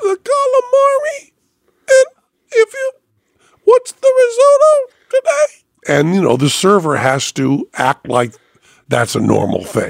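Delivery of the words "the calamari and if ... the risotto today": put-on squeaky cartoon mouse voice. Retelling ordering at a restaurant after a voice box injection: Mickey Mouse voice. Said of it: "Mickey Mouse".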